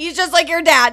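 loud, high-pitched voice.

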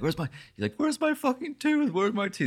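acted-out scream. Telling how he tore up the grass hunting for his tooth, retelling a scream. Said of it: "he's like screaming".

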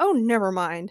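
usual speaking voice

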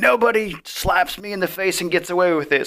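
high, furious, angry yelling. Recounting a man yelling at a woman, retelling a yell. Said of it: "he's yelling at her like".

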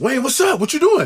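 put-on high-energy, hyped voice. Retelling how an old boss greeted people: imitating an old boss's high energy. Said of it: "High, high energy".

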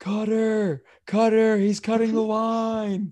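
slow, loud, high holler, last word stretched. Retelling calling out a line cutter in a queue: imitating own yelling. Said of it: "I start yelling".

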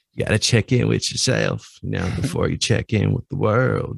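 rough-edged, creaky put-on voice. Redoing a quote the other speaker declined to voice: Matthew McConaughey voice. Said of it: "in a Matthew McConaughey voice".

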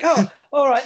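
high-pitched, loud, laughing delivery.

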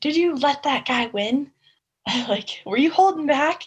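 mock, high, loud commanding military yell. Retelling what a company commander yelled after a race: imitating a commander yelling. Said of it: "yelling at me".

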